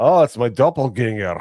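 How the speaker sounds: put-on loud, high-pitched Scottish accent. Retelling what The Drinker said when you met him at the meetup, in The Drinker's Scottish accent. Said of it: "That Scottish accent".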